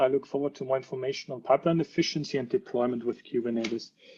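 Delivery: ordinary talk, nothing marked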